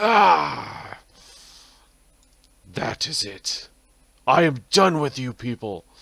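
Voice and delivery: very loud, drawn-out, high, furious shout. Voicing Strahd after a fireball hits his face: angry Strahd shout. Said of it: "He seems angry now".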